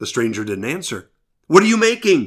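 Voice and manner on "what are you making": high shout, calling out even louder. Narrator voicing a second cave person calling to a silent stranger, shouting even louder. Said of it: "Another shouted even louder".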